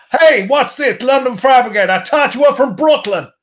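put-on Long Island American accent, pitched way up. Retelling what a guy from Long Island said: American Long Island accent. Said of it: "Can you do a really bad American accent? ... I'll tell you I can".

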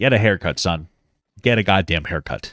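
put-on stern, scolding dad voice. Joking about a reality show contestant's hair: dad voice scolding. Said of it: "I sound like his dad".

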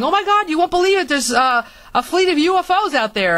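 high, excited, bursting shout. Retelling how father came in through the front door, imitating his yell. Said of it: "he's yelling".

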